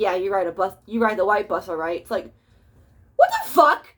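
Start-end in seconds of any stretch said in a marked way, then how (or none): 0.0-2.0 amused, chuckling, humoring go-along tone. Retelling how a teacher reacted to a child's answer: imitating a laughing teacher. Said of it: "the teacher's laughing".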